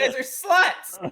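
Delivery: very high-pitched, piercing shrieking scream. Stepping out of character to the other players, screaming. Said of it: "why are you screaming at us now?".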